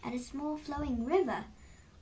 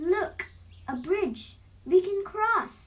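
very loud, high-pitched shout; 6 semitones higher, 8 dB louder than usual. Narrator reading a story, Brother Goat spots a bridge and calls out: shouted.

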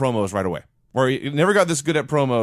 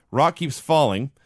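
ordinary talk, nothing marked

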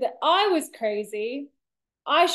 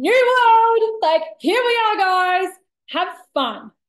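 high, loud, bratty whooping warrior-princess shout; 6 semitones higher, 7 dB louder than usual. Recalling matching a police officer's energy, retell screaming out. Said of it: "who just screamed out".

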